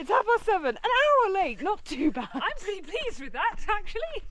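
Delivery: play-acted bright, chirpy, jolly cheerful voice. Repeating what Nicola just said about the time, imitating Nicola's jolly voice. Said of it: "said in a jolly voice".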